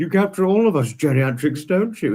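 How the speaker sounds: put-on posh, upper-crust voice. Retelling what a man said to the speaker about the friday visit, posh voice. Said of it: "He said it in his posh voice".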